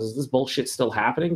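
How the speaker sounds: ordinary talk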